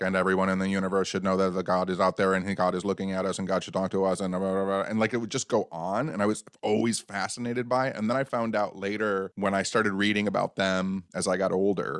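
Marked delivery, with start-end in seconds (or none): 0.0-4.8 rapid, flat monotone drone, getting faster. Recalling a woman who would start channeling, imitating her: fast monotone channeling voice. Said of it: "speaking really fast in a monotone voice".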